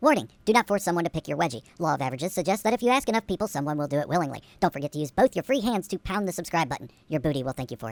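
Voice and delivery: tiny, small, squeaky put-on voice. Closing a video with a warning for viewers: tiny squeaky voice. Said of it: "pay attention to the tiny squeaky voice".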